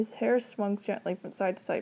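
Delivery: plain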